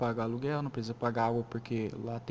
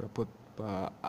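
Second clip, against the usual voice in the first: stuttering, much quieter; 2 semitones lower, 4 dB quieter than usual. Speaker talking about editing their own recording, stuttering. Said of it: "comecei a gaguejar de novo".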